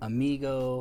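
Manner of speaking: amigo said with a very heavy American accent. Listing English loanwords from pop culture, very American accent on amigo. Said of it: "I'm saying that with a very American accent on purpose".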